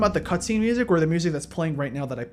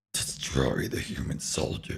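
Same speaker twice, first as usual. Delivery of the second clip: put-on villain voice; 7 dB quieter than usual. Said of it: "I even attempt to do his, do his voice".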